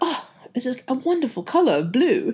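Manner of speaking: bad put-on British accent. Quoting a man admiring a pen's color, in a bad British accent. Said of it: "I do a really bad British accent, as you can tell".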